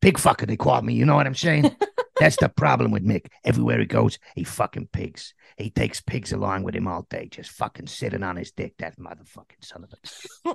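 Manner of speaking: put-on New Jersey mobster accent. In a casual chat, he slips into a comic bit: New Jersey mobster voice. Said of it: "That's my New Jersey mobster voice".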